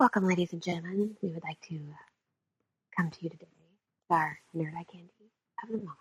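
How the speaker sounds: very quiet, hushed, low public radio announcer voice. Opening a podcast segment, teased as the NPR version: NPR voice. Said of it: "N P R version".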